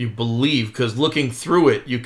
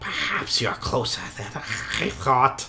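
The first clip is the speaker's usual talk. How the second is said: hushed, breathy whisper under the breath; 6 dB quieter than usual. Game master voices a character assaulting a player's mind: whisper. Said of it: "he he whispers".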